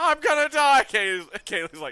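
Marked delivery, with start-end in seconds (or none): 0.0-0.8 shrill, very loud, high, panicked shriek. Mocking own earlier panic in the game: imitating own yell. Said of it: "I love how I yell".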